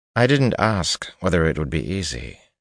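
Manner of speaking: plain reading voice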